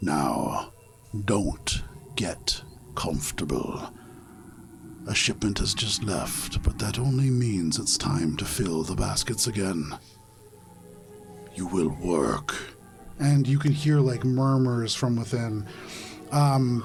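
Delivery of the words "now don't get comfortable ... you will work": very deep, low-pitched voice. A storyteller voices a figure the players hear through a door, low deep voice. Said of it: "you hear this low and deep voice say".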